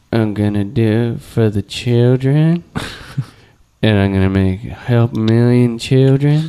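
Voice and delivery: low, slow, pilled-out sounding voice. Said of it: "best [name] impression".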